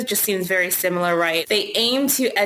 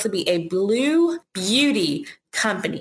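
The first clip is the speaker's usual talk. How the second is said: deliberately very slow, careful word-by-word enunciation. Speaker trying to avoid a tongue slip, saying it very slowly. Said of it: "I'm saying this so slow".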